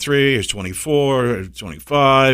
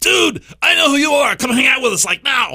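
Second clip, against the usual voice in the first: very high-pitched, casual, easygoing voice; 14 semitones higher than usual. Newcomer retelling how Jay invited him to hang out, in a Jay impression. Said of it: "That was a good Jay impression".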